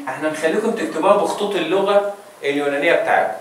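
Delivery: ordinary delivery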